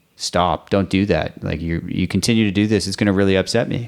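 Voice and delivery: put-on stern voice. A parent retells telling off a kid who was mean to his kids, retelling using a stern voice. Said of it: "use kind of a stern voice and be like".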